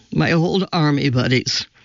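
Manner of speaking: ordinary delivery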